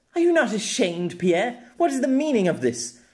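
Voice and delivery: very high, indignant, angry exclaiming. Narrator voices Marka speaking to Pierre, exclaiming in Marka's voice.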